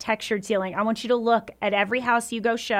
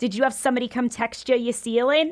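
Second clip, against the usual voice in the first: put-on New York accent. Quoting a woman during a showing, new york accent. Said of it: "a little like New York Eastern accent".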